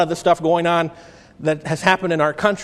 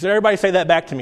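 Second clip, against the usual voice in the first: normal talking voice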